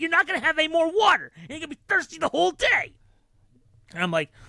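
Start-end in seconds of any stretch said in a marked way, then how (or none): 0.0-2.9 put-on yell, higher. Retelling how a mom next to her yelled at her kid: imitating a mom yelling. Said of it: "she is yelling at her kid".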